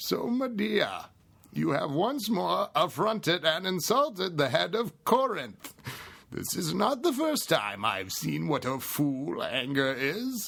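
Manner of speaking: high, swooping masked villain voice. Actor explains he gets stuck doing his play lines like this; Bane voice. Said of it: "doing my lines in my Bane voice".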